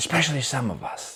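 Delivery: quiet, hushed voice. Noting that some family members are hard to please: said quietly. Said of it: "I'm saying it quietly".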